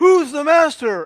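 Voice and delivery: very high-pitched call-out shout. Telling a convention story, quoting a man in costume: retelling a shout. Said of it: "he shouts out".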